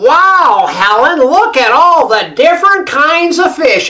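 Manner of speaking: put-on nasal American accent. Retelling a voice heard in a crowded Irish fish shop: nasally American voice. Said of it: "that nasally American voice".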